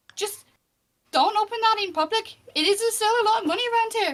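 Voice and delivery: attempted high, squeaky character voice slipping into Irish. A storyteller voices a character leading you off by the hand, attempted squeaky character voice. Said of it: "I realise that's meant to be a squeak, not a Irish accent".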